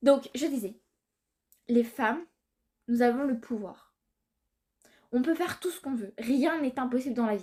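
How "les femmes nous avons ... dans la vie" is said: grave, earnest, solemn, serious tone. Settling in to address the audience seriously, in a solemn tone. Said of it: "je me mets sur un ton solennel".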